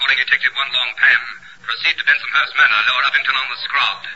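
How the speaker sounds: low, clipped police radio dispatcher voice.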